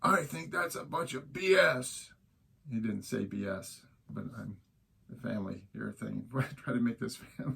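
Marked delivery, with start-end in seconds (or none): 0.0-2.1 high, furious, in-your-face screaming yell. Retelling how a man leaned in and screamed in the speaker's face, retelling a scream. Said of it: "he's screaming at me in my face".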